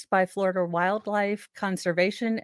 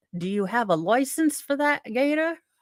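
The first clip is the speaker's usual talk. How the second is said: terrible, bad, put-on British accent; 4 semitones higher than usual. Asking about a man's alligator permit, in a terrible british accent. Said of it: "that was a terrible British accent that sounded more uh, Australian".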